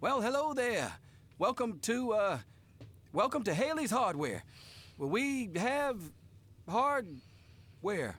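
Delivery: high, jittery, jumpy, fumbling, nervous voice. Greeting a customer who walks into the hardware store: jittery, nervous greeting. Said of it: "why are you so jittery".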